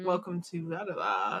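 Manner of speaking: deep late-night radio host voice. Describing a late-night radio host to a friend, doing a deep late-night radio voice. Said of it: "like the deep voice".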